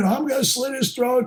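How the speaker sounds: high-pitched screaming, raving on. Retelling a threat yelled at the speaker on a boat: imitating someone screaming. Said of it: "he's screaming".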